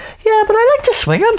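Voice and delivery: put-on Welsh accent, very high-pitched. Retelling what a new acquaintance said back, in a Welsh accent. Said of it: "your Welsh accent is better than mine".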